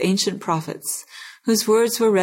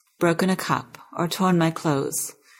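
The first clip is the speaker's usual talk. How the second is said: plain reading voice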